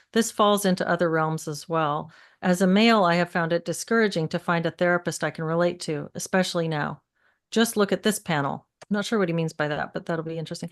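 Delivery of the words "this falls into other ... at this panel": ordinary delivery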